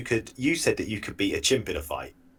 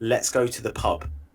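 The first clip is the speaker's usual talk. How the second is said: ordinary talk, nothing marked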